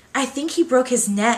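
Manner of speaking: trembling, unsteady voice. A theater teacher speaks right after a boy's fall, in a shaky voice. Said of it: "said in a shaky voice".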